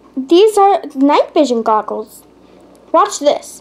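ordinary delivery

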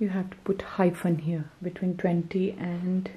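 soft unvoiced whisper.

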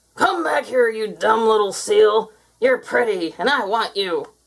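loud, furious, raging creature-like shout. Mutsok on the beach, calling after the seal, raging. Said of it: "stomping his feet and raging".

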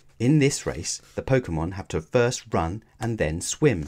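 plain reading voice

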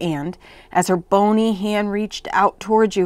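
plain

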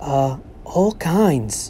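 said quietly. A boy answers the librarian, who asked what books he likes, said quietly. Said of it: "Carlo said quietly".

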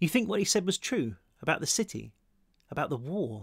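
ordinary delivery

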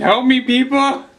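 put-on tiny, high baby voice. Speaking for a baby who won't let them help: voicing the baby. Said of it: "She's like".

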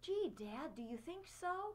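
very high, keen, eager, drawn-out voice. Henry asks his dad after Mr. Huggins's guess about the garbage man, eager question. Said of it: "Henry asked eagerly".

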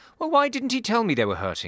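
tart, sharp, very high-pitched voice. Narrator reads the aunt answering Nicholas, with asperity. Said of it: "with some asperity".

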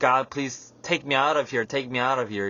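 acted desperate imploring voice. Retelling how a beaten man in a jail cell prayed, acting out a desperate prayer. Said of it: "Praying like that".

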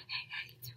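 soft, unvoiced whisper. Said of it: "I'm whispering".

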